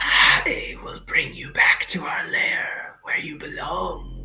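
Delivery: hissing, whispered monster creature voice. Narrating a creature speaking back to a player, in a hissing creature voice. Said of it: "it kind of hisses, and in Gnomish speaks back to you".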